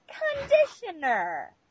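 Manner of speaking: drawn-out, slow, loud, very high nasal voice. Reading a shampoo bottle in the slow, loud, nasal voice of a woman. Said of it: "literally how she talks".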